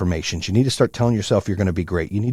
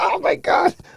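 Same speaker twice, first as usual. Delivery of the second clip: acted, very high giggling cry, laughing exclamation. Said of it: "I'm fucking laughing at myself".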